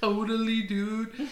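easygoing surfer dude voice. Describing how a surfer talks, doing a surfer dude impression. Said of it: "that's more like a surfer dude".

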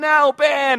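high whiny cry. Retelling the Star Wars scene as Ben falls, in a mock-whiny Luke Skywalker voice. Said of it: "in that whiny Luke Skywalker voice".

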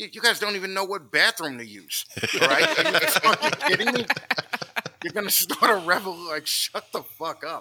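put-on old army veteran voice, ranting. Retelling a meme where an old army vet answers the protester: imitating an old-time army vet. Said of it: "the old-time army vet comes on and goes".

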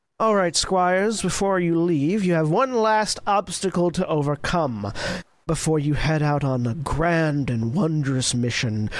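mocking, sarcastic delivery. Voicing a character sending the Squires off: sarcastic. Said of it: "you can hear the sarcasm in her voice".

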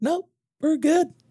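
squeaked, very high-pitched, dismissive tone. Retelling what others answer in quarterly reviews: imitating in a high-pitched voice. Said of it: "That's a really high-pitched voice".

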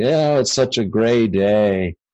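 put-on heavy, thick Russian accent, drawn out slowly.

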